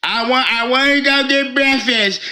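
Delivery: put-on boozy, half-cut drunk voice. Retelling how a man who was drinking sounded on a live stream: imitating Billy's drunk voice. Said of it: "listen to how he sound".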